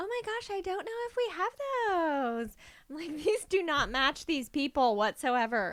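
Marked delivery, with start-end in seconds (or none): 0.0-2.6 put-on very high, sing-song, swooping Valley Girl lilt. Mimicking an older lady she heard, in a Valley Girl voice. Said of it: "this Valley Girl voice".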